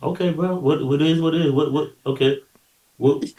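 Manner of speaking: imitated calm, steady tone. Retelling how someone answered yelling: imitating someone staying calm. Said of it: "He's too calm, man".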